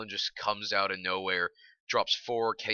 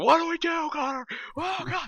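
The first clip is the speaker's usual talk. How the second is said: very high, frantic, panic-stricken shriek; 4 dB louder than usual. Recounting a fight where two squadmates went down fast, imitating Fallen's panicked screaming. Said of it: "went to like PTSD mode and started screaming".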